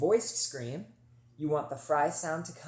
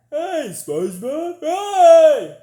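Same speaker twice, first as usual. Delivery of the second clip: yawny open cartoon voice, higher and louder; 13 semitones higher, 18 dB louder than usual. Showing how to reach mixed voice from chest: Patrick Star noise. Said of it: "a Patrick Star noise".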